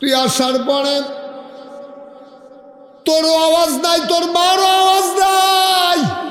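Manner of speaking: passionate preacher-style shouting.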